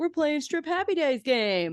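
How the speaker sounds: high-pitched, goofy put-on voice. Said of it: "And Joey's like".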